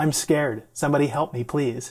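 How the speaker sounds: plain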